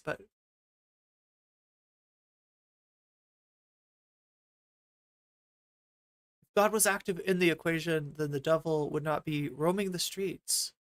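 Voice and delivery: tearful, choked-up, crying through the words. Talking to Chad while playing Valheim, getting choked up and crying. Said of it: "I don't know why I'm crying".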